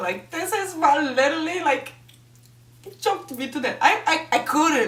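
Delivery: high, choked voice fighting tears, words catching. Speaker recounts a kissing scene to an audience, holding back tears. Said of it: "I'm trying not to cry here".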